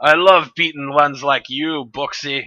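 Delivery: put-on Scottish accent. Voicing Master Scourge snapping a whip: put-on Scottish accent. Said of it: "my accent keeps changing".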